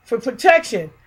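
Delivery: ordinary talk, nothing marked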